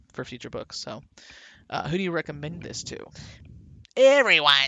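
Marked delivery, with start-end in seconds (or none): 3.9-4.5 raised, loud, high-pitched voice. Answering who to recommend the book to, as a Lena impression. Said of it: "That's my best Lena impression".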